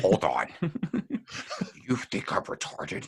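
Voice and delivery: airy, breathy half-whisper. Quoting a sitcom line to another speaker: Kevin Malone voice. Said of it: "and he's like".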